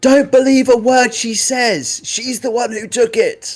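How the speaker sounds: high-pitched, accusing shout from a distance. Voicing a sister calling from outside, shouting an accusation. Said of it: "And shouts in".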